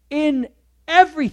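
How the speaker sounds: strong stress on "in", high and loud.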